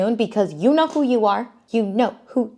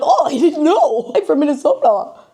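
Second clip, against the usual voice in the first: put-on goofy, dopey guy voice, higher and louder; 6 semitones higher, 4 dB louder than usual. Recapping a show, the speaker mocks Joey, imitating Joey as goofy. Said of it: "He's like Goofy from the Goofy movie".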